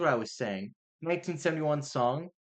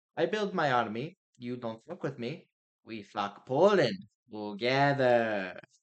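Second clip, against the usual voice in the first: horrible, bad, put-on Russian accent. Acting out a quoted line in a joking bit, horrible fake Russian accent. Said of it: "that was a horrible fucking Russian accent".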